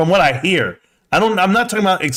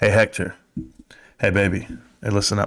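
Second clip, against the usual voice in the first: fake, put-on seductive, sexy voice; 9 semitones lower, 5 dB quieter than usual. Talking to a viewer who may have the stream muted: put-on sexy voice. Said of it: "I'll give you my sexy voice".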